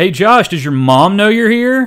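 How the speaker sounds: loud, high jeering heckling shout. Retelling what a crowd member yelled during wrestling: imitating a fan shouting. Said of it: "a fan shout".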